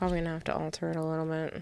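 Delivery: barely audible, very quiet, low mumble. Answering a question about altering a build, talking low and mumbling. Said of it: "you talked low and mumbled".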